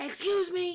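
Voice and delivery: put-on yelling. Retelling how loss prevention called across the store: imitating someone yelling. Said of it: "yelled at us across".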